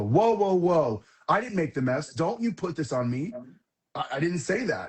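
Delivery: put-on offended, defensive, pushing-back tone. Acting out a partner's reply to a question about dirty diapers: imitating an offended defensive reply. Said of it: "talk about it without feeling offended".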